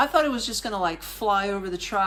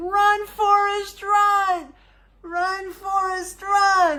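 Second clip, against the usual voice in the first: put-on high, loud, slow yell in an American accent. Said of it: "I'm yelling in American".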